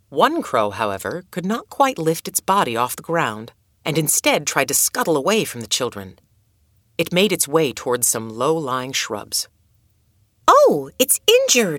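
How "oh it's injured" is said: very high-pitched, loud exclaiming voice. Narrator reads Adoet seeing a crow that cannot fly, exclaiming. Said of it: "exclaimed Adoet".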